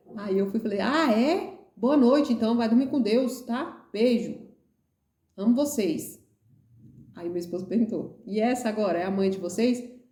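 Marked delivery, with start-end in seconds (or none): 0.8-6.2 play-acted firm, commanding, no-nonsense motherly tone. Telling how she said goodnight to her kids, retell it with authority. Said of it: "uma autoridade muitas vezes".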